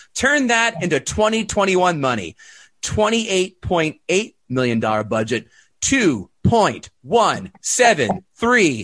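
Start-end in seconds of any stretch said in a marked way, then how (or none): 5.8-8.9 robotic talking toy voice, higher. Reading out box office figures, say one number as a Speak & Spell impression. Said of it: "That's my speaking spell impression".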